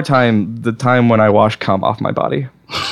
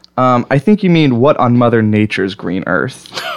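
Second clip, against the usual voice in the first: plain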